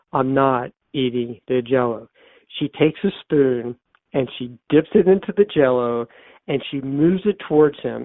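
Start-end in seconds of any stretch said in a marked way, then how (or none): 0.1-2.0 put-on, slightly stronger, firmer voice. Retelling a man in bed refusing the jello a woman offers, stronger voice. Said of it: "in a little stronger voice".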